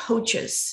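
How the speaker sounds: coaches stressed, slow and drawn out. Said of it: "the stress on the word coaches".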